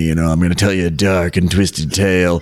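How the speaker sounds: sultry and grainy delivery. A host introduces today's story to the listeners; sultry, grainy voice. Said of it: "today I'm a little bit more sultry and grainy".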